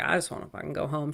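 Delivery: mock worn-out, exhausted, fed-up tone. Retelling a movie scene after trivia: imitating Nikki sounding exhausted. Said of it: "she is, like, exhausted".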